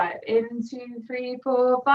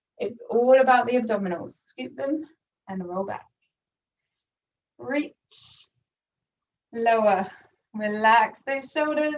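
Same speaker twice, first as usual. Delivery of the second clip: voice trembling and shaky, strained as from effort. Speaker cueing a hard exercise to listeners, voice shaking from effort. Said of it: "My voice is shaking because it's hard".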